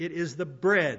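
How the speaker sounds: slow, deliberate delivery.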